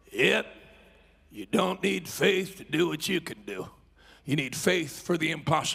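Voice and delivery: low, raspy voice. The speaker retells what Brother Bollinger told him, Brother Bollinger's raspy voice. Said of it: "in that raspy voice".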